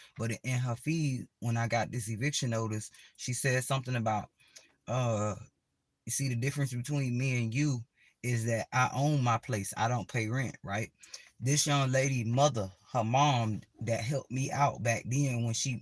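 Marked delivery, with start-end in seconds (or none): none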